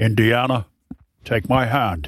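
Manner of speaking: low, put-on Scottish accent impression. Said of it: "I'm just going all Sean Connery".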